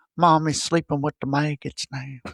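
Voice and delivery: just a hint of light Southern twang. Quoting a horror movie character's line, slight southern twang. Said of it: "she's got a little bit of like a twang".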